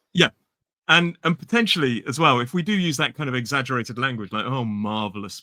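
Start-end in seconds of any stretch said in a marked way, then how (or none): 4.4-5.4 sarcastic, ironic delivery at lower pitch. Showing how British speakers use exaggerated words to mean the opposite, sarcastic delivery. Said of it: "particularly if it's delivered like that".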